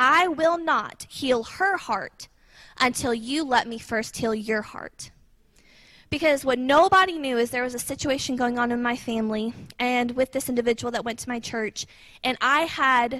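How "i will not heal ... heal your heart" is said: mock-stern fatherly voice, slower. Acting out a man's reply to a plea to heal a daughter, retelling a stern fatherly voice. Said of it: "in the most stern fatherly voice".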